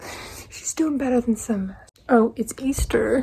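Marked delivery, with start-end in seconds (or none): 0.5-1.8 fast, repeated, throwaway aside.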